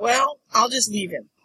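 ordinary talk, nothing marked

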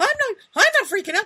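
very high, loud, voice cracking up an octave. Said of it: "his voice cracks".

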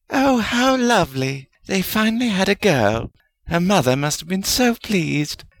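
high cooing voice. Hearing that a family finally had a girl, a character coos. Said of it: "Helga cooed".

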